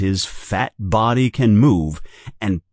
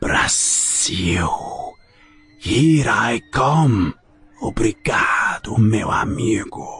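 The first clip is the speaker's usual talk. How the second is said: low, slow, drawn-out hissing snake voice. Narrator reading the snake's words as it passes Harry, low hissing snake voice. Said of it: "say in a low, hissing voice".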